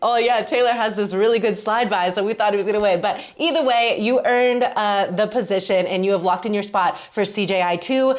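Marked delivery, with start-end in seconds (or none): 0.0-3.0 sarcastic, tongue-in-cheek, mocking coach-like voice. Retelling what the coach said about Taylor: imitating Coach Ferris sarcastically. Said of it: "sense of, I don't know, sarcasm".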